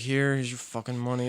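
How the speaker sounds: low, soft, sullen, grudging mutter.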